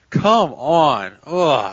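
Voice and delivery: put-on disappointed parental groan. Retelling how someone reacted to Sean laughing, acting out disappointed groan. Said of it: "He looked like a parent, like disappointed".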